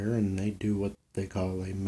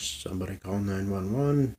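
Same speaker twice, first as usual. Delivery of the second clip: plain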